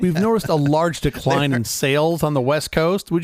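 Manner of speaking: ordinary talk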